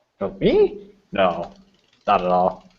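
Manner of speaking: heavily sarcastic, very slow and drawn out, swooping pitch. Answering an accusation of being a kleptomaniac, in character: sarcastic denial. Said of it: "the way he just said it was very sarcastic".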